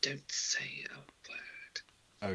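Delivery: very quiet, hushed, barely voiced whisper. Posing as a slave behind Gaius, her character whispers to him: whispering. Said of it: "she whispers to Gaius".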